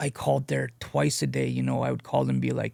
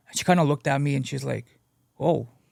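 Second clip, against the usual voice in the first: ordinary talk, nothing marked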